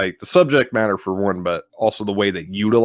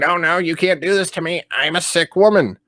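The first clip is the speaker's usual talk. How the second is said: high, frantic, acted-out pleading scream; 8 semitones higher than usual. Describing a scene where the mother is held down, imitating her scream. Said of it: "and she's screaming".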